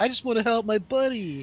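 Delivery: very high cartoon-hero voice, pitched way up. Imitating a dubbed line that sounds like Leonardo from the Ninja Turtles. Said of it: "he sounds like Leonardo from the Ninja Turtles".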